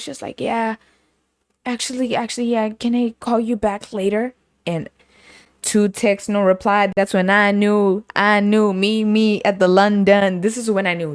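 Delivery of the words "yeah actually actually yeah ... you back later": acted-out drowsy, groggy, just-woken sleepy voice. Retelling a phone call that woke someone up: imitating a groggy voice. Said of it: "sounding groggy".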